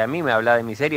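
ordinary delivery

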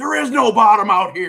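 very loud, forceful, high-pitched, spat-out retort. Retelling a deckhand answering a fisherman face to face: imitating a forceful retort. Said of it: "literally, like, spitting in his face".

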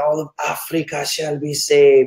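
put-on slow, preaching delivery in a German accent. Retelling a preacher's crusade line: Reinhard Bonnke German accent. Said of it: "in his German accent".

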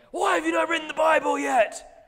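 very loud, high shout.

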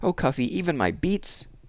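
high, pleading, begging tone. At lunch, a girl told to eat everything on her plate answers: pleading. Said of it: "pleading against eating beets".

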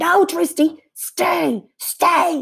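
shrill, very high, loud scream. Someone screams at a dog that got off its leash; screaming. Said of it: "2020 screamed".

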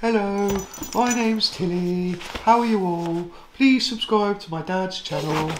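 very high-pitched pet dog voice. Channel owner voicing the pet dog greeting new subscribers, Tilly's own voice. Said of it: "Tilly has her own voice".

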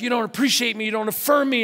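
mock worked-up, wounded, high, upset yelling. Retelling screaming at her through the bedroom door years ago, reenacting upset screaming. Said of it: "I was like upset".

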